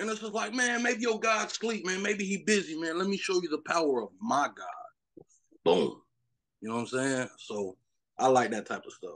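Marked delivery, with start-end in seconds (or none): 0.5-5.3 high, swooping, teasing, jeering mocking tone. Retelling Elijah facing the prophets of Baal: imitating Elijah taunting. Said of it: "he was taunting them".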